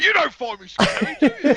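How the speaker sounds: very high, fatherly dad voice. Imagining a man turning to his kids in the car: imitating a dad asking his kids. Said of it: "He's turning to his kids going".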